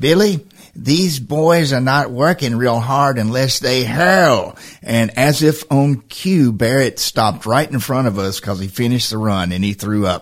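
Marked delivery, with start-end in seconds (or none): 0.0-4.6 put-on Boston accent throughout the whole line. Telling Gail Dwyer a story, quoting her at his son's fitness test, Gail Dwyer's Boston accent. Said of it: "your Boston accent".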